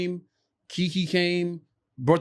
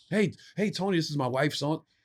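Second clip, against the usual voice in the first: put-on awkward voice, quieter; 3 semitones lower, 5 dB quieter than usual. Imitating a childhood friend who acts weird around him: imitating Brown acting weird. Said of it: "stop acting like that".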